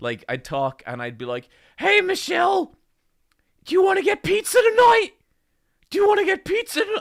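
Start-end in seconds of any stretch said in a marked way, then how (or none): 1.8-6.8 shrill, very high, loud cartoon character voice. Recalling how a throat problem made him sound, addressing Michelle in a Rick and Morty character voice. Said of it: "I genuinely sounded like a Rick and Morty character".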